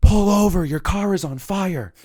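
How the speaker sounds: shrill, very high, loud alarmed scream. Retelling a driver yelling out his window on the highway: imitating someone screaming. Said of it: "he screams out the window".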